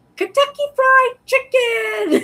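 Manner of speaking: acted, very high, loud scream by a group. Retelling the family's answer about take-out dinner: imitating family screaming. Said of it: "everybody would scream".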